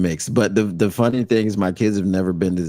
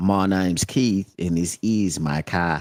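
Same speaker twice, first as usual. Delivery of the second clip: put-on Australian accent, slower. Asked to say it in their accent, imitating a tv commercial, australian accent. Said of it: "That's the only Australian accent I can do".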